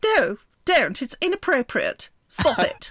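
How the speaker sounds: put-on very clipped posh accent. Telling a story about him, the speaker quotes a man in a very clipped accent. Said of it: "In a very clipped accent".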